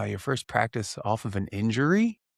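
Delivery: upward, rising pitch on "injury". Echoing the other speaker's last words as a question, rising pitch on injury. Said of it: "I'm just taking the last couple words and then I flip it with an upward inflection".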